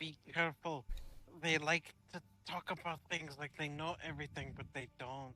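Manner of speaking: quiet half-whispered delivery. Player voicing Caleb's words to the group, half-whispering. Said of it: "are you whispering?".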